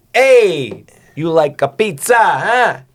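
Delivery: loud Italian accent, very high, very slow. Doing his Italian bit at the table with a co-host, in an Italian accent. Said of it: "I like doing yeah Italian".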